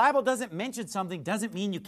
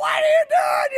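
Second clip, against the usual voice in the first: high, loud screaming. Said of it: "they were screaming at me like".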